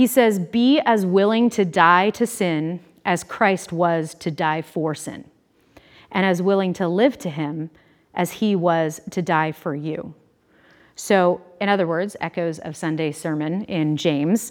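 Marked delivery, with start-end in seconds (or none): 0.4-10.1 very slow, deliberate, drawn out word by word. Speaker reading a quote aloud before correcting the slides, super slow. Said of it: "I'll say it super slow".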